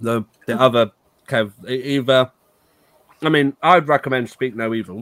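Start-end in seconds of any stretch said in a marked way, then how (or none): 1.7-5.0 speaking with mouth full, chewing. A podcast host recommends a film for the next episode, talking while eating a tablet. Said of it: "I'm eating a tablet".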